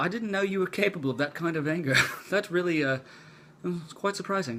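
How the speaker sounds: horrible, bad put-on British accent. Retelling what a man said right after an apology, in a horrible british accent. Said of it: "that's a horrible British accent, I'm sorry".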